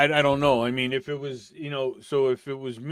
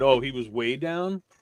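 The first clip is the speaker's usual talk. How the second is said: ordinary talk, nothing marked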